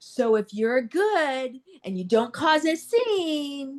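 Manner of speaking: put-on patronizing talk-down. Retelling what an officer said on arriving: imitating a condescending tone. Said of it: "condescendingly is like".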